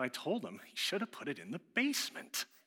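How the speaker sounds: mock muttering. Retelling what his wife muttered after checking the briefcase, imitating muttering under breath. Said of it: "She mutters under her breath".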